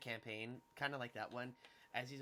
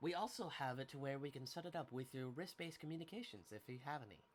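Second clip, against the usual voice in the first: mechanical, robotic droid-style voice; 3 dB quieter than usual. Voicing a droid answering a character's questions in a scene: droid voice. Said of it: "It's so hard to do this fucking voice".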